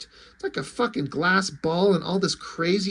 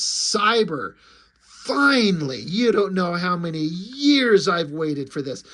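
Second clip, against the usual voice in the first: ordinary delivery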